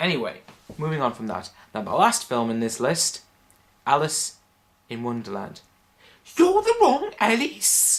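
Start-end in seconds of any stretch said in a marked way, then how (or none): 6.4-8.0 deliberately bad character voice, very high, slow and loud. Reviewing films, the speaker quotes a line from the movie: bad Alice in Wonderland impression. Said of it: "Bad impression".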